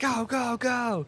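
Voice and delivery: very high, screamed, drill-style shouting. Joining in on drilling recruits while firing shots, pretend screaming orders. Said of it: "and I'm screaming".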